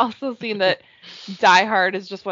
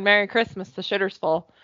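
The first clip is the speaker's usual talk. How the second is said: ordinary talk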